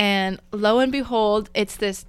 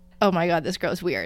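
ordinary talk

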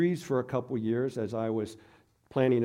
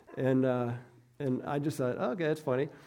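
normal talking voice

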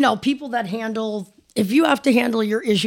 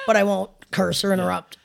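normal talking voice

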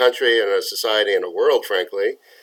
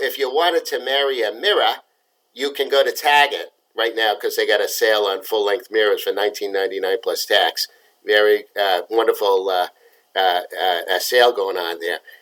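joking put-on Boston accent for laughs. Showing the joke they often tell, in a joking Boston accent. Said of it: "in my uh, Boston accent".

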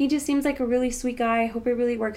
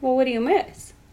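put-on, dry, sardonic, sarcastic tone; 4 dB louder than usual. Recounting the reply to someone who said they missed you after one date; retelling a sarcastic reply. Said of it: "I was just kind of being sarcastic".

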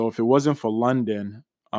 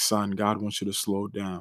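put-on whisper, quieter; 3 semitones lower, 8 dB quieter than usual. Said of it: "He whispered three things".

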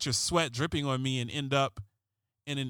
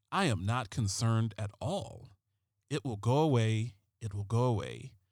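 put-on, dramatic delivery, milking every word; 3 semitones lower than usual. Quoting someone's last statement, done in a David Caruso voice. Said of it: "I got to do the David Caruso voice".

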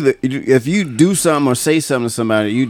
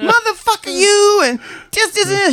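put-on screaming, pitched higher. Retelling how a coworker's wife ripped the shower curtain: imitating the wife screaming. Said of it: "screaming these insanities".

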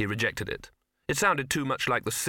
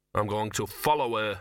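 plain reading voice

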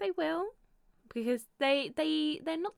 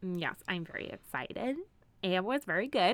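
very slow, drawn-out Minnesota accent; 4 semitones lower than usual. Answering someone who is excited for them, slipping into a Minnesota accent. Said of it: "I don't know why I'm talking like Minnesota".

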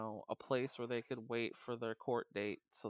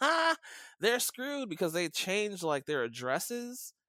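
play-acted jeering, swooping sing-song, loud high laugh; 9 semitones higher, 8 dB louder than usual. Retelling how officials dumped people and rode away, imitating a mocking laugh. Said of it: "rode away laughing like".

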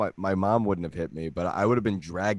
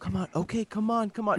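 very high, soft, non-confrontational placating voice; 13 semitones higher than usual. Retelling a rich mom coaxing her tantruming kid: imitating a non-confrontational mom. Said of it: "not confrontational mom".

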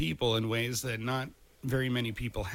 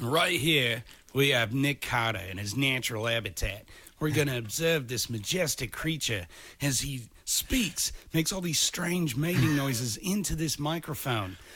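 thick, over-the-top Australian accent; 2 semitones higher than usual. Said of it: "like a stereotypical [name] cranked up to 11 kind of Australian accent".

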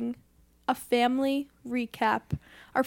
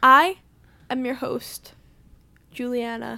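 dramatic pause, then louder; 5 dB louder than usual. Introducing the podcast host name: dramatic pause before the name. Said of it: "I was pausing for dramatic effect".

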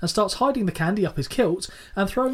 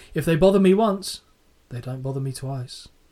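put-on mock-deadpan delivery, lower pitch; 6 semitones lower than usual. Recapping a TV scene, quoting a man about trick-or-treaters, retelling a deadpan line. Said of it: "He then deadpans and say".

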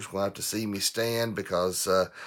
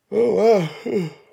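talking through a yawn, higher and louder; 13 semitones higher, 10 dB louder than usual. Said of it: "I'm yawning this morning".

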